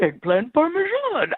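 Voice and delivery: very high, poorly done, puppet-like voice. Retelling how a date ordered dinner: imitating a Yoda voice. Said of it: "he actually did it in a Yoda voice".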